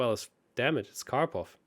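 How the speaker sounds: ordinary talk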